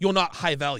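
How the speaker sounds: normal talking voice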